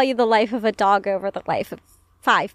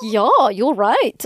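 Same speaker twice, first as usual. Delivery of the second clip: acted German-accented voice. Acting out how he would answer if you confronted him about his biases, in a put-on German accent.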